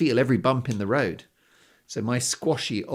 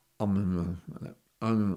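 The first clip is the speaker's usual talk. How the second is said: put-on mumbling voice, pitched lower; 4 semitones lower, 5 dB quieter than usual. Retelling a lad's reply when asked his name, imitating Ahmed's mumble. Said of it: "said his name in such a mumbly way".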